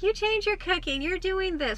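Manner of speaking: high, slow, mocking voice.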